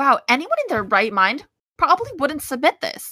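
high, loud, snide professor voice. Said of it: "She's just like".

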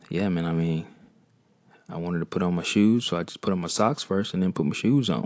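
put-on breezy, offhand, nonchalant delivery. Retelling how a friend described his vasectomy: imitating a friend, nonchalant tone. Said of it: "just so nonchalant".

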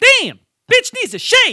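high, loud blurted yell, acted out. Speaker retelling how someone yelled out in class during a birth video, retelling a yell. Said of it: "he yells out in class".

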